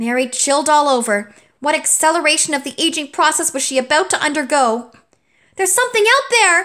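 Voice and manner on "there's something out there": very high-pitched, loud yell. A character bursts into the kitchen, shouting. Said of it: "shouted Elliot".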